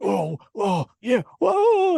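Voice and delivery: straining, cracking, very high, drawn-out scream. Mocking an actor's movie delivery: Will Smith impression, cracking voice. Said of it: "his voice cracks when he's trying to, like, scream".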